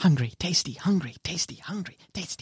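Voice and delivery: muttering under breath. Game master voicing a creature at the top of the stairs, muttering under her breath. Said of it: "You just hear her muttering".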